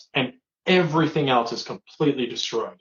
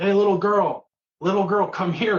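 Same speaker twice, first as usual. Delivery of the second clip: put-on high screaming, as if far away; 6 semitones higher than usual. Retelling a film scene where a man in the road calls to her: imitating a man screaming. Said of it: "he just starts screaming at her".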